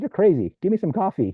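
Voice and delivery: high-pitched, loud, incredulous outburst.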